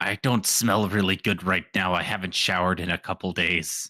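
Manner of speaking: whispered voice. Whispering in character to a fellow party member: whispering in character. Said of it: "I whisper to Deft".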